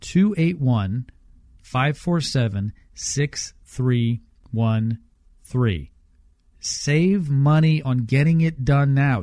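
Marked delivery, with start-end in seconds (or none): 0.0-5.9 slowed-down, slow pace. Repeating the roofing company's phone number a second time, said slowly. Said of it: "I'll say it again slowly".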